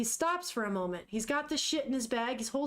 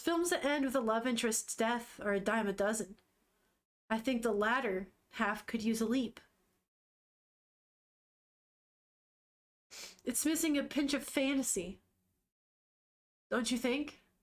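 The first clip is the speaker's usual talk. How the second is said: mock breezy, super nonchalant, offhand delivery. Retelling a scene where she critiques his film: imitating a nonchalant tone. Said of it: "super nonchalant".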